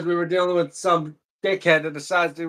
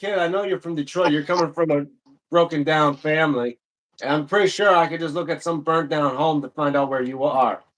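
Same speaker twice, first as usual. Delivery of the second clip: usual speaking voice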